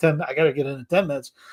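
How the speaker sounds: ordinary delivery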